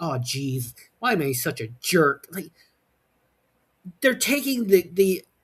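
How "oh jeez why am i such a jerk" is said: put-on overly earnest hero voice, lower. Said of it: "the Boy Scout routine to an".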